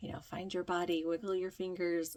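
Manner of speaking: ordinary talk, nothing marked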